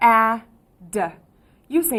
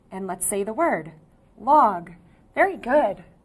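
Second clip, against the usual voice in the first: plain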